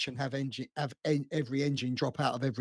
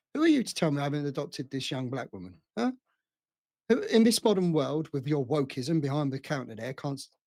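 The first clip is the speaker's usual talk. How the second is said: normal talking voice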